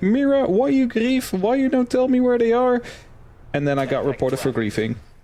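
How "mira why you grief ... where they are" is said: acted, high-pitched shouting. Retelling how a ranked teammate reacted after dying: imitating a teammate shouting. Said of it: "he starts shouting at me".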